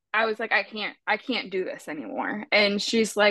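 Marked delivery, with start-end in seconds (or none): none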